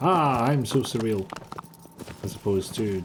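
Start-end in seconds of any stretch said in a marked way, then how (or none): 0.0-1.3 mock smug, self-satisfied tone. Mocking a comedy show's surreal humor: mock smug tone. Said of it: "smug in the thought of that".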